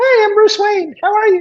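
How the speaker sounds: very high-pitched, loud helium voice. Joking about a character note for Bruce Wayne, doing Bruce Wayne on helium. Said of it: "sounded like he was on helium".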